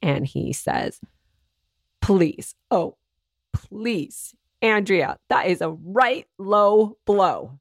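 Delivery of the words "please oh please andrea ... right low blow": put-on indignant childish tantrum, huffing and puffing. Retelling a suspect's reply to an interviewer: imitating an angry, huffing outburst. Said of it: "he loses it like a two-year-old who just got her cookie taken away".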